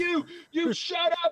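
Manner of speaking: very loud, shrill, high drawn-out yell. Retelling being reprimanded over the phone: imitating someone yelling. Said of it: "just yelling at me over the phone".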